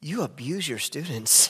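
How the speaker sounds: teasing, joking tone. Quoting what a man would say after giving his opinion, retelling a joking jab. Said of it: "he would jokingly say".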